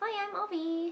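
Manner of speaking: put-on cutesy, high little baby voice. Holding up the baby to greet the people, speaking for Avi. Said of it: "Say hi to all the people, Avi".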